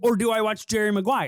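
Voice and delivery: ordinary talk, nothing marked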